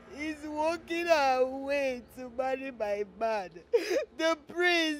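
tearful, sobbing speech. Character complains to Mama, crying while talking. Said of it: "Is that why you're crying?".

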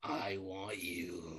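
deep, very low, barely audible, hushed eerie voice. Telling of being paralyzed, quote the voice that speaks to you: creepy voice. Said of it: "You hear that creepy voice telling you".

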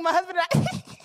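laughing, cracking up mid-phrase. A newlywed retells first saying this phrase aloud, retelling laughing while speaking. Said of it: "I just started laughing".

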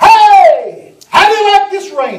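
loud screaming. Telling a rain story to the pastor, the speaker retells screaming loud. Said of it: "and I screamed loud".

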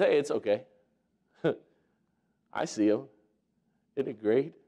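mock, as calm as can be, easy, reassuring. Retelling a Bible story, voicing Elisha surrounded by enemies: imitating calm Elisha. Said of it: "as calm as can be".

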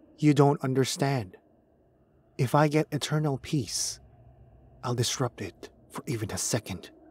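plain

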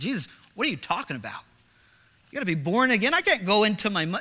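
mocking, sarcastic, swooping sing-song delivery. Acting out Nicodemus answering Jesus about being born again: imitating sarcastic Nicodemus. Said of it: "it almost sounds sarcastic".

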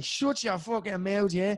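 put-on high Dublin Irish accent. Doing the impression that people in Wales ask for: Conor McGregor impression. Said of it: "do that Conor McGregor impression you do".

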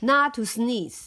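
plain reading voice

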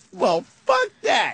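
put-on cocky woman's voice. Retelling a woman's reply to a boyfriend pulling her away: imitating a cocky, confident woman. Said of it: "she's all cocky and confident going".

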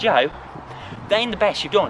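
ordinary talk, nothing marked

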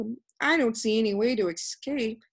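ordinary delivery

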